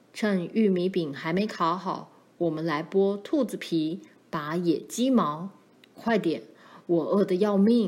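ordinary delivery

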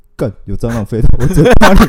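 very loud, high, panicked, drawn-out shriek. Retelling mom's reaction when a cockroach flew into her mouth, retelling a scream. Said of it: "突然在那边尖叫啊".

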